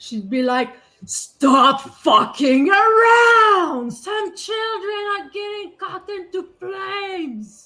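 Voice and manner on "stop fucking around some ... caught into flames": very high, very loud, booming amplified yell. Voicing a character who shouts at her mates to stop: magically amplified shout. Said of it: "her voice raises her th-, three times the normal".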